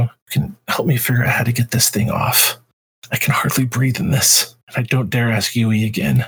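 soft whisper, under the breath. Voicing a character in armor leaning forward to another: whispering in character. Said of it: "she just kinda whispers over to you".

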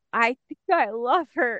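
mock devastated voice. Quoting a character's line from the show, imitating a devastated voice. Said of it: "the devastation in his voice is like".

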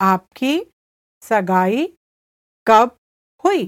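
slow, careful, deliberate repetition, word by word. The speaker repeats a translated phrase for listeners, said again slowly. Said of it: "I'll say it again slowly".

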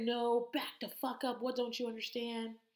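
mock worked-up hollering, mild, high-pitched, half strength. Retelling a scene from a show, act out Danny screaming at someone. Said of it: "And he's like screaming".

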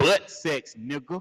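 blunt, direct delivery with no softening. Retelling what a woman said to him, imitating a blunt crude line. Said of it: "not if you gonna say it like that".

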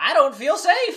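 shrill, very loud, high squealing character voice. Recapping a show's ending, voicing the character's closing line: Hot Pop impression. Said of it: "That was a good impression".

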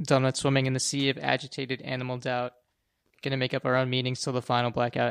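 ordinary talk, nothing marked

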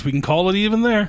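high, loud taunting call. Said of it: "you can hear just [name] just like".

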